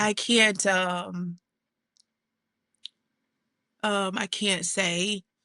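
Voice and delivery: tearful voice, crying while talking. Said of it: "Take your time".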